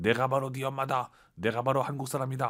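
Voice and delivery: ordinary talk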